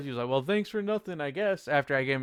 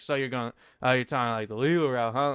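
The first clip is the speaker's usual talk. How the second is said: sassy, cheeky tone; 2 semitones lower than usual. Retelling someone's reply in the store: imitating a sassy reply. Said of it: "like, a sassy type of way".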